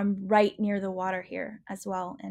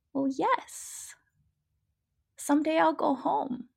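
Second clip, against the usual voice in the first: mock-calm, put-on calm voice, much higher; 8 semitones higher than usual. Retelling what a child once said to them, imitating her calm voice. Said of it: "she says in this really calm voice".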